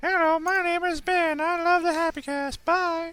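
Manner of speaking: very high-pitched, silly, annoying put-on voice. Showing how a listener voicemail will sound: annoying put-on voice. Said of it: "with a less annoying voice than that one was".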